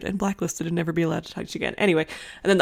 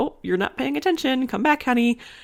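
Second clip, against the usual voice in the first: mock gentle, silly tone, higher; 7 semitones higher than usual. Retelling what a teacher said to a daydreaming student: imitating a gentle, silly teacher. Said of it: "she says it in a very, like, gentle, silly kind of".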